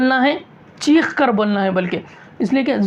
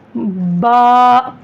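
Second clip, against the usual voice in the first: loud, open-mouthed, full-mouthed "ba". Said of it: "मुंह खोलना भी है".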